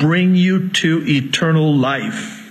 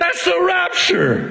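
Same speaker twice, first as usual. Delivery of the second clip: shouting, higher pitch; 12 semitones higher than usual. Explaining a verse just read aloud to listeners: yelling. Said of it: "I'm sorry if I'm yelling at you".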